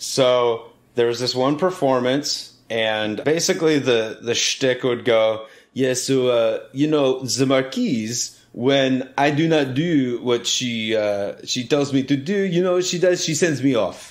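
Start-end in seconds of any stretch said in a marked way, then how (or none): 5.7-14.1 hopelessly bad put-on French accent. Retelling a french performer's shtick, terrible french accent. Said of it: "the reason why I'm speaking this way is he's French. And it's a terrible French accent".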